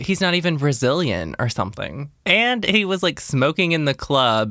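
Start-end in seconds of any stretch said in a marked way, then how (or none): none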